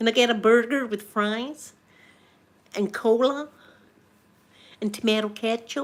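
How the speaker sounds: demonstrated American accent. Speaker demonstrates their own American accent. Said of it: "That's my American accent".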